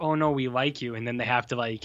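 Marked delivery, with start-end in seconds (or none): none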